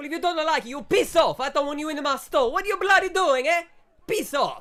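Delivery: very high, very loud, shrill bellowing shout, bad accent. Voicing a burly shopkeeper shouting at a couple: shopkeeper shouting, bad accent. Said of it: "Johnny's accent is worse than my one".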